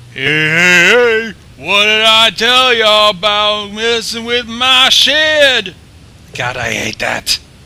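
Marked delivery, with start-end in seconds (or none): 0.2-5.8 very loud, high cartoon voice, heys drawn out. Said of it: "a Fat Albert voice on a quiet pony".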